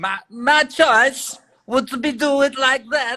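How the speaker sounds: very high, heavily exaggerated Eastern European accent. Asked by the other speaker to redo the line, doing a Borat voice. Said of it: "can you do your Borat next to that impression?".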